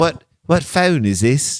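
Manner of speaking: put-on British accent. Acting out a suspect's excuse about a phone, imitating a British accent. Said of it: "he's trying to do a British accent".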